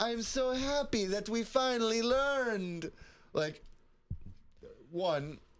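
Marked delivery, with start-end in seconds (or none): 0.0-2.9 very high, slow put-on Italian accent. Retelling a character's reaction in a scene, attempted Italian accent. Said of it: "an attempt at an Italian accent".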